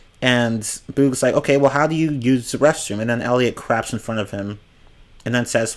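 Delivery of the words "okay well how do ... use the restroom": normal talking voice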